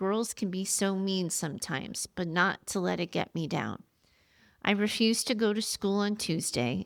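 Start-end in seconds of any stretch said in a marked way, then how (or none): none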